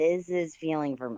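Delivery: ordinary delivery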